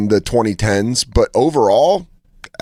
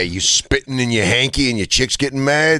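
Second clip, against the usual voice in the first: put-on advertisement announcer voice. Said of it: "That is the voice of the lawyer".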